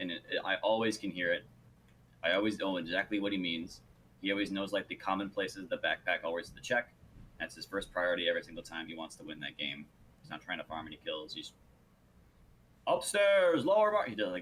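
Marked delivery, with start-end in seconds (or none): 12.9-14.0 put-on big, deep yelled call, louder. Retelling a teammate's callout of where the backpack is: imitating Quicks' big deep yell. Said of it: "this big, deep voice that he goes for".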